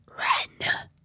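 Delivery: hoarse, hushed, raspy whispered voice. Retelling a voice heard near the booth door: imitating a raspy whisper. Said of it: "in a raspy whisper".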